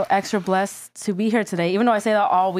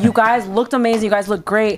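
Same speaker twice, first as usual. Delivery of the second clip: ordinary delivery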